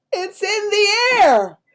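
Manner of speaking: high, slow, loud cry of amazement. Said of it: "And he says".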